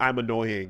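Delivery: ordinary talk, nothing marked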